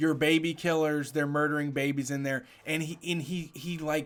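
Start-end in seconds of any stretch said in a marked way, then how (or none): none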